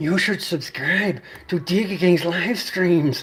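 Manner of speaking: slow, drawled, put-on celebrity voice. Plugging live streams in a Peter Lorre voice. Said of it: "how about Peter Lorre?".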